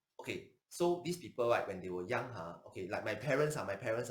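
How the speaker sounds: ordinary talk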